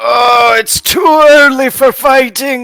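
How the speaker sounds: very high, drawn-out groan. Voicing a character rolling out of bed: groaning. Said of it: "rolls out of bed groaning and just going".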